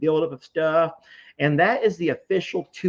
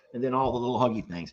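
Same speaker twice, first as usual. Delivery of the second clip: usual speaking voice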